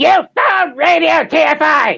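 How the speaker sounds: bratty cartoon kid voice with attitude. Showing someone how to say the Radio TFI line: Eric Cartman voice, more attitude. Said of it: "Put a little bit more attitude in it".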